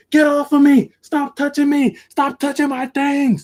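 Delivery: very high-pitched screaming screech. Retelling a struggle over a bag: imitating someone screaming. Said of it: "he's screaming at us".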